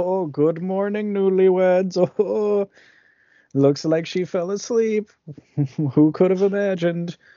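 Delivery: cheery folksy chatter. Retelling a scene where villagers come in the next morning, imitating jolly villagers. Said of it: "they're all like jolly".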